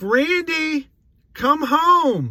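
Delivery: high, loud calling-out voice. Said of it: "And then she's like".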